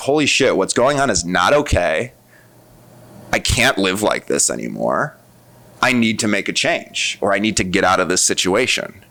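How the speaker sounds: normal talking voice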